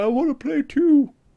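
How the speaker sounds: put-on pitiful, forlorn little voice, very high. Voicing an unused Xbox One left in its box: put-on really sad voice. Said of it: "I gave it a really sad voice".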